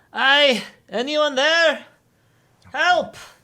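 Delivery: very high, loud, distant-sounding calling out. Voicing an unseen stranger: voice calling out for help. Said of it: "you hear a voice calling out".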